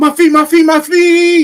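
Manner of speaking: screaming. Telling a joke, voicing the punchline character: screaming. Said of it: "Then God screams".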